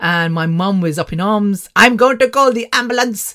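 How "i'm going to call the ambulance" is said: put-on Indian accent, raised. Retelling mum's reaction to the oxygen not going up, in a put-on Indian accent. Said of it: "I was putting an Indian accent on with my mum".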